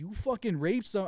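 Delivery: shouting. Retelling a phone call to someone: retelling own yelling. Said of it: "shouting, like, like, yelling at him".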